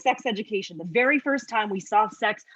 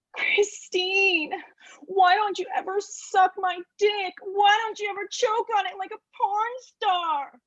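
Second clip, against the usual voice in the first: very high, whingeing, whining tone; 10 semitones higher than usual. Telling how a narcissist whined at her daily, imitating a whiny man. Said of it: "he would whine at me a little something like this".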